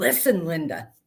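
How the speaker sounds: plain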